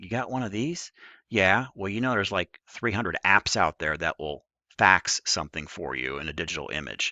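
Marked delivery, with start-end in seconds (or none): 0.0-0.9 quiet, dry, pointed sarcastic tone. Retelling holding up a phone to someone looking for a fax machine, retelling a sarcastic remark. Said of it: "I sarcastically held up my phone".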